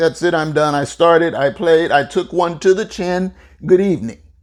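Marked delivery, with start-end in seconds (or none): none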